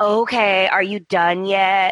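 put-on defensive, impatient woman's voice. Retelling how a cast member brushed off Hope: imitating Steffi being defensive. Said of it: "she was giving Hope those looks and being very like".

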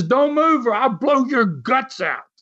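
high, mild yelling. Retelling how a policeman with a gun yelled at a wrestler: imitating a cop screaming. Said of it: "he screams at him loud enough".

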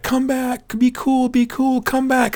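acted-out scream. Retelling screaming after a passing paramedic vehicle, re-enacting own screaming. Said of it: "and I'm screaming like".

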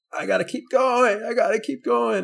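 driven, intense, high-pitched voice.

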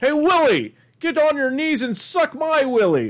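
very high put-on puppet voice. Admitting you can't remember how he sounds, bad Alf impression. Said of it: "so I'm just gonna give like oh, the worst one".

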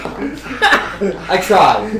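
laughing quietly through the words.

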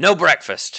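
gruff, terse, surly dwarf voice. Game master voicing a new dwarf who comes to the player's cell, gruff dwarf voice. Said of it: "This new dwarf talks with a gruff voice and keeps his words short".

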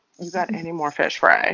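ordinary delivery

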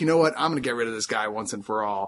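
ordinary talk, nothing marked

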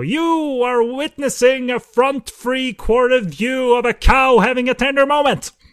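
belted, very high, loud, booming announcement. Imitating a director while talking about a cow scene: loud David Lynch impression. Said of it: "vague David Lynch impression".

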